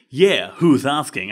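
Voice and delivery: rough, gruff delivery. Narrator retells answering a caller asking for Miss Boom, retelling a gruff reply. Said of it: "I responded gruffly".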